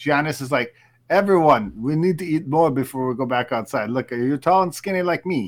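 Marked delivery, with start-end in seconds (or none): 1.1-5.5 put-on speaking with Italian accent. Joking about the team at halftime, imitating Giannis: Italian-accent Giannis impression. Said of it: "That was my Italian, Italian Giannis".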